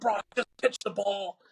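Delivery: put-on high yelling. Retelling a youth baseball game: imitating yelling at his son. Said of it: "I'm yelling at them".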